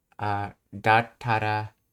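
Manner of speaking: ordinary talk, nothing marked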